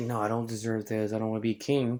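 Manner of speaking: plain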